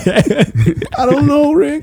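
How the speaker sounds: high, very slow, drawn-out character voice. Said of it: "Morty sounds like that".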